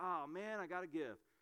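grudging, unwilling, reluctant tone like a chore. Acting out a giver who does it unwillingly, mock-reluctant, grudging. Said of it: "Not reluctantly, like".

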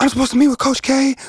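very high-pitched yelling, arguing tone. Retelling arguing with security guards at a crowded night event; retelling yelling at security. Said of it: "I'm yelling at them".

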